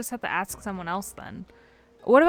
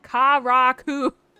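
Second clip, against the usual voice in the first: raised, put-on Americanized accent; 6 dB louder than usual. Trying out how to pronounce a name, with a put-on American accent. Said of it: "I'm gonna put the American accent on it".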